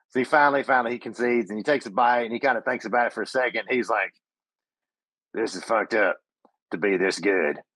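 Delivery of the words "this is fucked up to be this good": rough low tough-guy voice. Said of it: "kinda gruff guy".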